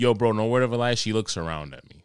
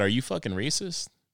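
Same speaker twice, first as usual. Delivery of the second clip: joking, mock accusatory tone, quieter; 3 semitones higher, 4 dB quieter than usual. Retelling what they asked her, as a joking question. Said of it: "But I did it jokingly".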